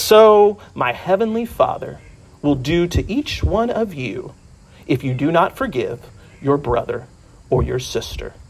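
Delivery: put-on wise old sage voice. Speaker retelling Matthew addressing his silent congregation: Matthew's old sage voice. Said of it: "in his best old sage voice says".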